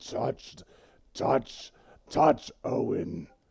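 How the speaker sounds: dark, slow laughing voice. Voicing a dark voice in a character's head, laughing while speaking. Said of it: "And it starts laughing".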